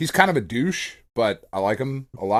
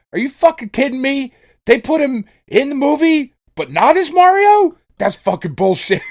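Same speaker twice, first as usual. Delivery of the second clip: put-on very high, loud, furious child's rant; 7 dB louder than usual. Retelling a kid's reaction to a movie character, imitating an angry kid. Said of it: "She was so mad".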